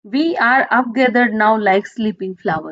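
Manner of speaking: ordinary talk, nothing marked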